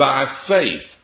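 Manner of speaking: stress leaning into "by faith". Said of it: "and I'm stressing the word".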